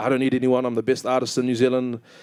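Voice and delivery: ordinary talk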